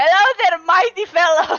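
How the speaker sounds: shouted. Player has Lilia walk up to strangers, shouting a greeting. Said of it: "just shouts".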